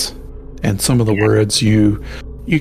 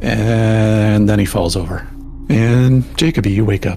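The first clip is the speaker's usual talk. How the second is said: normal talking voice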